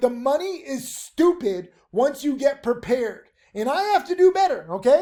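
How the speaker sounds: shouting. Praising students' huge trading gains, urging improvement: yelling. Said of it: "I'm yelling at you".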